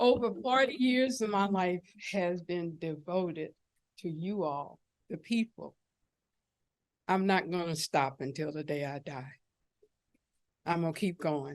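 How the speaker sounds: trying not to cry, holding back tears. Addressing the people, the speaker speaks while holding back tears. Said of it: "I'm going to hold my tears back".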